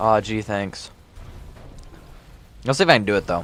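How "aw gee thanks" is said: defeated, worn-out sounding voice. Answering a friend's compliment during a long stream, sounding defeated. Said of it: "you just sound so defeated".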